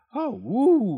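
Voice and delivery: gasped exclamation, very high pitch. Narrator reads dr. desoto gasping inside the fox's mouth. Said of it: "he gasped".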